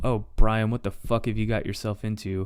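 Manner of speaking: ordinary delivery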